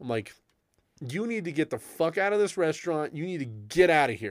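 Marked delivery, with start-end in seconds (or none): 1.0-4.3 harsh telling-off tone. Retelling confronting a man in a restaurant: retelling own yell. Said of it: "and then I yell at him".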